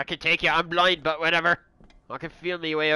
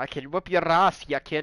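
tough-sounding Scottish brogue, laid on thick. Repeating a line heard moments before, imitating someone's accent. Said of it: "I love his accent".

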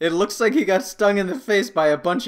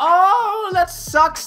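high, cooing little-kid voice, mock sympathetic. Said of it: "all the little kids come say".

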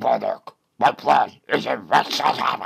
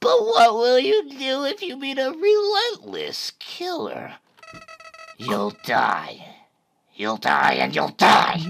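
very high, swooping flower voice; 14 semitones higher than usual. Speaker reading game dialogue aloud, in Flowey voice.

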